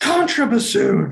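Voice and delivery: high, slow, barked mock tyrant conductor yell.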